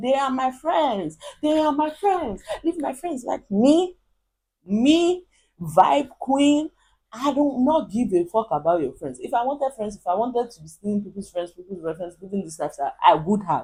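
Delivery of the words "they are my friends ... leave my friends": put-on raised, high-pitched yelling outburst. Retelling what a trending girl shouted, imitating someone shouting. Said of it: "why is this bitch shouting?".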